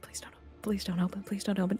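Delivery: muttered whisper. A character hears her name being changed and is whispering to herself. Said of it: "Juna's just whispering to herself".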